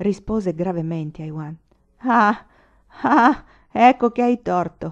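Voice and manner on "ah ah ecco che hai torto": shouting, crowing triumphantly. Told he has drunk more than necessary, the captain shouts back triumphantly. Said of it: "gridò trionfante Bungie".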